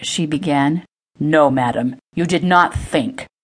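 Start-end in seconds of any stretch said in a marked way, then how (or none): 1.2-3.2 scolding, reproachful, slower. Narrator reads Lord Thornton's reply to the woman who apologized, scolding. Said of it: "Lord Thornton scolded".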